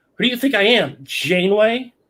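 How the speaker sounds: animated cartoon character voice. Imagining a line for Riker to say: Zap Brannigan impression. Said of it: "in his best Zap Brannigan impression".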